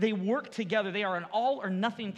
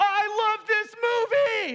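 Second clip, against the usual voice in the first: very high, stretched-out, drawn-out, top-of-lungs scream; 12 semitones higher, 8 dB louder than usual. A parent recalls their four-year-old yelling out during movie previews, imitating Brinley screaming. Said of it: "just screaming".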